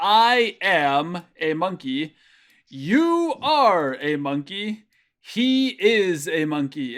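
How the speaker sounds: I, you and he stressed, slow and loud. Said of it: "each time that I said that".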